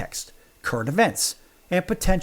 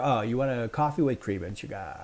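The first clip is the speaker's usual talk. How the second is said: mock annoying voice, lower, much quieter; 5 semitones lower, 6 dB quieter than usual. Acting out a coffee order exchange, mocking an annoying barista. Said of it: "That is so annoying".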